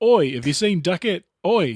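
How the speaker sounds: loud, high-pitched, projected put-on Australian accent. Describing how people talk in an Australian movie's opening, imitating Australian accent. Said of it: "you know immediately because people are like".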